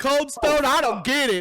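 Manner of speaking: very high, loud, mocking put-on hillbilly accent. Imitating hillbillies confused by an ice cream shop: mocking hillbilly accent. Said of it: "That accent was point on".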